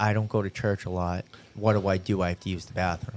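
quiet, hushed, murmured stage whisper. Retelling what a friend half-whispered during a wedding: imitating a half-whisper. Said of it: "Aaron whispers to me".

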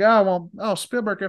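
very high-pitched cartoon frog puppet voice. Retelling what George Lucas told Spielberg: Kermit the Frog voice. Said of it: "I'm trying to do Kermit the Frog".

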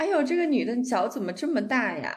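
shocked, astonished tone in Shanghainese. Retell an older Shanghai man's remark at a foot massage shop, imitating a very surprised Shanghainese speaker. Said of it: "用那种很吃惊的上海话说".

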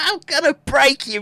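gloating, mock-menacing voice.

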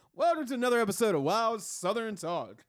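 very high, loud game show host announcer voice. Teasing his co-host about how he opens the show, in a game show host voice. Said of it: "He sounds like a game show host when he opens up the damn show".

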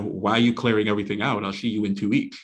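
ordinary delivery

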